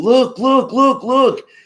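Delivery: mock shrill, very high, urgent, excited shouting. Speaker retelling spotting flying fish while swimming, re-enacting an excited yell. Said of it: "I'm yelling and pointing".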